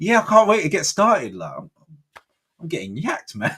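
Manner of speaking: play-acted, very high, perky, chirpy, cheerful voice. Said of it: "you're really chirpy this morning".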